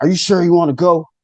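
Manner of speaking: mock stern, angry tone. Retelling an encounter with a winged figure asking a question: retelling a stern, angry voice. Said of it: "in the sternest voice, like angry".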